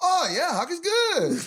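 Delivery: put-on South American accent, very high, very loud. Retelling the hunter's proud reply after being told not to shoot hawks: imitating a South American accent. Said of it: "I think you could tell".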